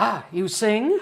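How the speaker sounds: booming voice. Retelling a cantor who came over to the speaker, big booming voice. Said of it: "in this big booming voice".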